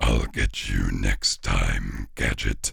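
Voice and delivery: very low, slow, drawn-out, raspy villain voice. Showing how you just sound like a cartoon character, in the Claw voice from Inspector Gadget. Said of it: "I just sound like the Claw from".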